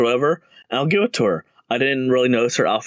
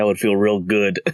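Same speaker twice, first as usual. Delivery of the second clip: acted-out, mock flat deadpan delivery; 3 semitones lower than usual. Quoting a character's reply while describing lines in this one, retold deadpan.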